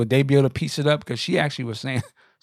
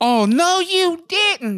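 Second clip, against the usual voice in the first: mock, very emotional girly voice, higher and louder; 4 dB louder than usual. Retelling a man's angry retort on stage: imitating a very emotional feminine retort. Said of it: "very emotional, female".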